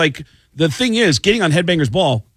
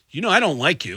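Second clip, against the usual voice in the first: normal talking voice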